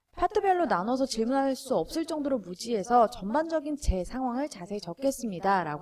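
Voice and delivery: ordinary delivery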